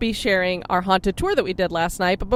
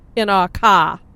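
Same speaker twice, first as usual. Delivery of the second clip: loud Boston accent, r dropped in car. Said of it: "There's my Boston accent".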